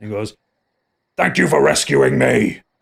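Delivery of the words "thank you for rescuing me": rough, creaky orc wizard voice. Voicing a shapeshifter thanking a player: voice of Gruzzle. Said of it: "you get the voice of Gruzzle".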